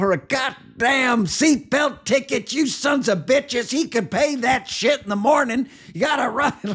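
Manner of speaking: shrill, very high-pitched, furious ranting. Retelling how the grandfather scolded the police: imitating someone cussing out cops. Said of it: "cussed out all the cops".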